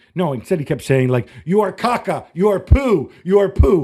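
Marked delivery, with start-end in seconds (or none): 1.5-3.9 put-on little-child voice, raised, drawn-out playground taunting. Retelling a coach insulting the referee: imitating a childish taunt. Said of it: "Like he's a freaking child".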